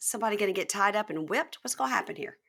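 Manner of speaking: ordinary talk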